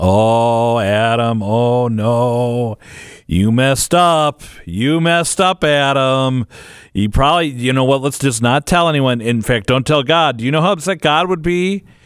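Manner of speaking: coaxing tone with the word "no" stretched out. Recalling the voice heard after committing serious sin; voice of the devil. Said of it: "hear that voice of the devil saying".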